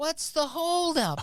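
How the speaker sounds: shrill, high, very loud yell. Retelling how a mother yelled while everyone waited: imitating a loud yell. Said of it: "She just yells".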